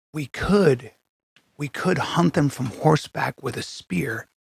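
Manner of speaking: hushed voice. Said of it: "Whisper it to us".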